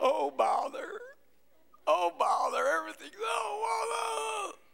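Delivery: each "oh" dragged out, creaky and glum. Describing his own first reaction to trials: Eeyore voice. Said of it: "I walk around like Eeyore".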